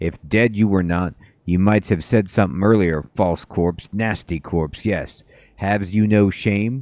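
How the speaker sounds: hissed, seething, angry scolding tone. Startled Marta leaps from a corpse and turns on it, Marta hissing angrily. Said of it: "then hisses angrily at the corpse".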